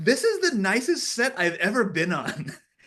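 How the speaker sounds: shrill, very loud, very high, drawn-out scream. Retelling what someone on set screamed: imitating someone screaming. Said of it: "she just screamed".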